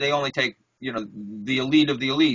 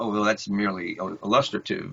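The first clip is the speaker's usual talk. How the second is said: play-acted condescending, lofty, dismissive art-critic tone; 5 semitones lower than usual. Retelling how art teachers dismissed figurative art: imitating condescending art critics.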